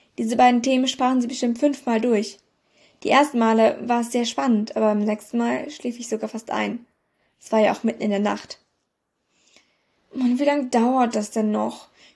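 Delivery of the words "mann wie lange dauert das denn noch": weary, groaning delivery. Reading the first-person narrator's line in the middle of the night, groaning. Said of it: "stöhnte ich".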